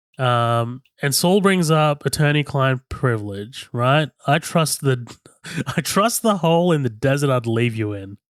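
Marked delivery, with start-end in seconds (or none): none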